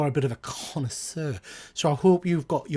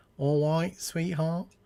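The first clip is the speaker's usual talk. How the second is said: put-on south London accent; 7 dB quieter than usual. Guessing another man's accent and repeating his phrase: imitating a South London accent. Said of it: "he's being London".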